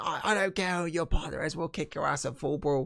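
campy, cheesy, high-pitched shout. Retelling a wrestling backstage segment, Davey Boy shouting impression. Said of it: "Davey Boy starts shouting".

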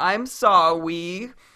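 mock, put-on baby-talk voice. Quoting a guy from an online video talking to his girlfriend, imitating baby talk. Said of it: "do baby talk to each other".

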